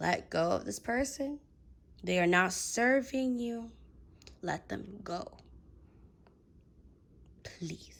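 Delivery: motherly, mom-mode tone. During a reading, the speaker urges the listener to let someone go, in mom mode. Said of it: "I went to like mom mode in this reading".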